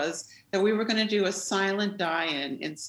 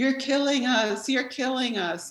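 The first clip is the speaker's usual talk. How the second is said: put-on man's scream, pitched high; 5 semitones higher than usual. Retelling a protester screaming from a pew: imitating a man screaming. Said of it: "starts screaming at O'Connor".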